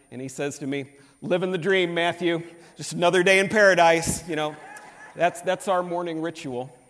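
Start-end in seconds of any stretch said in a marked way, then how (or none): 1.2-4.2 put-on booming voice, very loud, dripping sarcasm. Retelling a neighbor's morning reply about clearing snow: imitating a sarcastic neighbor. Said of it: "Totally sarcastic".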